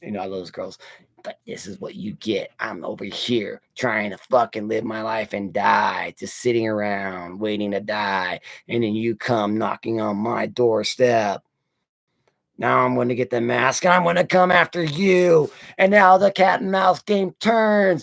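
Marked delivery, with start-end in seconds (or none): 1.2-15.5 masked slasher killer character voice. Pitching a story, speaking as Michael Myers: voicing Michael Myers. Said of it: "And Michael says".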